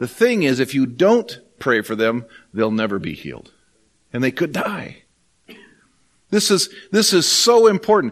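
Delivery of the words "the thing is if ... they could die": hushed, restrained, very quiet and soft voice. Retelling their own reply to a person: retelling a very quiet reply. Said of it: "I just very quietly said".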